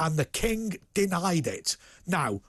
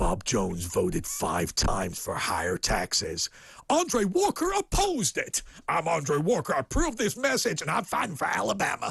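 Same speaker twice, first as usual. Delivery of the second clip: swooping put-on American accent. Mocking an American political campaign ad, in an American accent impersonation. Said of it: "my American impersonation".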